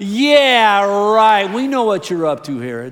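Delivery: very loud, sarcastic, sassy, drawn-out yeah. Leading listeners to repeat a reply to Herod's promise, with a little attitude. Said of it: "Say it with a little attitude".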